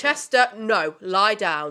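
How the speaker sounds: loud, slow, stern and strict voice. Breaking off mid-conversation to speak to Chester, in a strict mum voice. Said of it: "I'm doing my strict mum voice".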